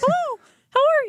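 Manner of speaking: put-on cartoon mouse voice. Joking about a fake podcast voice: Mickey Mouse voice. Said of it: "You went with Mickey Mouse?".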